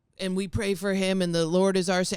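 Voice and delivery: put-on radio announcer voice. Retelling what an Uber driver's radio kept repeating: imitating a radio prayer. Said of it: "the radio kept being like".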